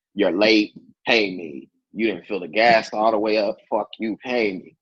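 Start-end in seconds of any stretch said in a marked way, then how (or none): none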